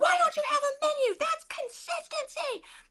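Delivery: shrill, furious, very high angry yelling. Retelling a woman yelling at you in a room full of people, imitating an angry yell. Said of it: "She starts yelling at me".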